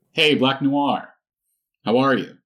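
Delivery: hello called out in high, loud hero voice.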